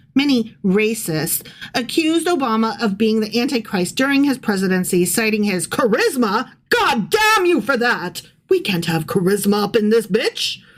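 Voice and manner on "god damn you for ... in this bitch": sarcastic put-on outrage. Reading out accusations against Obama, mocking the accusers: sarcastic mock outrage. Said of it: "that was all sarcasm".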